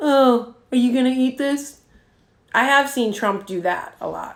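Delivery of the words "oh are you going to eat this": mocking tone dripping with sarcasm. Explaining sarcasm, giving an example question in a sarcastic tone. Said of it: "sarcasm usually takes a tone like that too".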